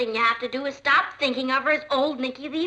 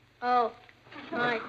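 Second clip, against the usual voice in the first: flat, unenthusiastic and quieter; 2 semitones lower, 4 dB quieter than usual. Practicing a greeting at a pretend dance, flat and unenthusiastic. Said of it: "Can you put a little more enthusiasm into it?".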